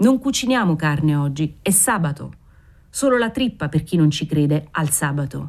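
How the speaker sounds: usual speaking voice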